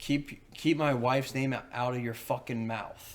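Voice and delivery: ordinary delivery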